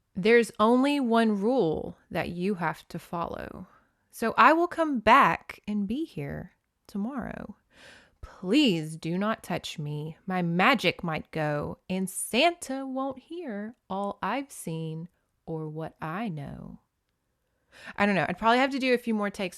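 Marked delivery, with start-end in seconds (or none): 0.2-16.8 very slow, menacing, spooky, ominous delivery. Reading a note aloud as a scary thing, scary ominous reading. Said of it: "let's read that as like a scary thing".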